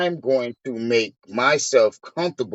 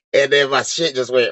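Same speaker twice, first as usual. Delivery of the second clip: plain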